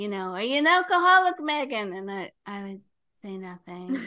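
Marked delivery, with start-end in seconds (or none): 0.3-1.9 very loud, high, rising shouted yell. Retelling how a sponsor would ask every week: imitating someone yelling. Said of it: "But he would yell".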